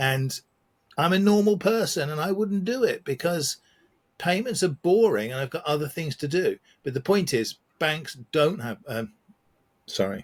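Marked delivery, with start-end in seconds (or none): 0.0-8.8 high, overly worked-up, slightly crazy-sounding rant. Listing the steps of a tedious payment process, sounding a bit too crazy. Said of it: "I'm standing a bit too crazy about that".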